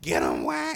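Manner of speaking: mock scream.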